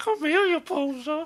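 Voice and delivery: very high, very loud, put-on movie character voice. Wondering how they did his voice in the movie, try a put-on movie character voice. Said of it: "I wonder if that's how they did his voice in the movie".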